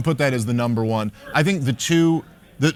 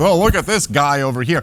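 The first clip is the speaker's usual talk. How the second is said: put-on, mocking, weird little piggy voice. Imitating a man speaking to three hundred thousand people, piggy inflection.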